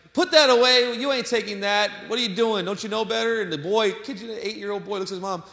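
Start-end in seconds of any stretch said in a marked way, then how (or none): 0.2-3.5 loud scolding yell in a mother's voice. Retelling a mom scolding her boy in a grocery line: imitating a mother yelling. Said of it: "the mom yelled at him".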